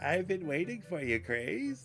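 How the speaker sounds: put-on elderly woman character voice. Voicing the grandma character's line for chat: old lady voice. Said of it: "I can't do old lady voice".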